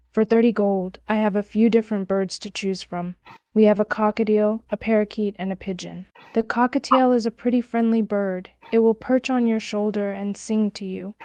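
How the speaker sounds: ordinary talk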